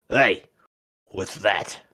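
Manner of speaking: rough, gruff, low goblin voice. Narrating a game scene, voicing an unseen speaker to a player: gruff Goblin voice. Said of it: "a gruff voice in Goblin".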